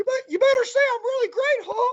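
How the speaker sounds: squeaky, very high-pitched cartoon voice. Imagining a cartoon mouse holding a gun to someone's head: Mickey Mouse voice. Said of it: "Mickey Mouse is holding a gun to my head saying".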